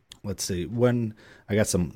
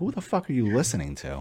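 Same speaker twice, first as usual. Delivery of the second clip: ordinary talk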